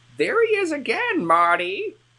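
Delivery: put-on very high, swooping elderly voice. Reading a man's line aloud from a book, old man voice. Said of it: "That's like my old man voice".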